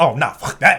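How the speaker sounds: ordinary delivery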